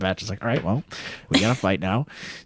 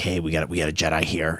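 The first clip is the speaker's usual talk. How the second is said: strange, sinister, weird put-on evil villain voice; 3 semitones lower than usual. Retelling what the Trandoshans say at the site: imitating a weird evil voice. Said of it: "in their weird evil voice".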